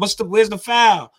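put-on screaming. Speaker describing a player's shot, acting out his reaction: retelling a scream. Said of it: "he was screaming because he was going like this".

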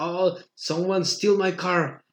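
somewhat desperate, half-desperate pleading tone. Retelling a man who came up speaking english, imitating him half-desperate. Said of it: "llegó medio desesperado y me dice".

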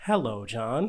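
put-on robotic voice. Imagining someone raising their iPhone to greet you: iPhone robotic voice. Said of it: "It's just like a robotic voice".

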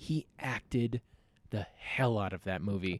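ordinary delivery

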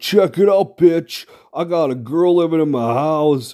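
play-acted smug, triumphant, high, gloating brag. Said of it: "I come back like".

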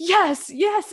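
put-on very high, loud, thrilled, excited cheer. Retelling how someone reacted while being given hints about numbers, imitating someone so excited. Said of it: "Luoxing would get so excited and be like".

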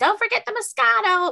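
put-on very high, loud, shrill child's yelling. Retelling a little girl screaming in the grocery store, retelling a child screaming. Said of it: "she's like screaming it in the grocery store".

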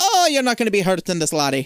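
put-on stage-Irish old man brogue. Retelling an older actor's line in a stage play, in a bad irish accent. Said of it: "That's a horrible fucking Irish accent".

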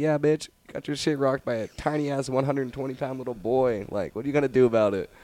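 mock drunken taunting. Retelling a drunk fight taunt at a bigger opponent: retelling own drunk trash talk. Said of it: "fucking talking mad shit".

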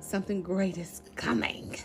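deep, put-on, Satan-like demon voice. Host announcing something new coming to the audience, in a demon voice. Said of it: "What is this demon voice you got?".

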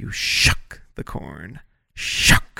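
exaggerated careful enunciation. Describing how she explains things, imitate her over-enunciating every word. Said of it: "they have to enunciate everything".

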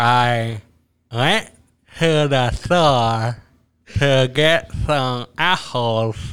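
slow talk pushed out with lips kept still. Trying a challenge with another speaker: talking without moving lips. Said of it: "talk without using our lips".

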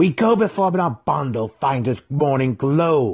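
thick but razor-sharp, loud snapping tone. Narrator voices Breeza speaking to a male before her mother, snapping. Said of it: "Breeza snapped at him".

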